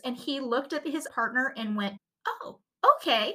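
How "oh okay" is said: uneasy, reluctant, nervous, pitch jumping high. Retelling a police officer's reply to his partner: retelling a voice going higher. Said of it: "his voice went higher".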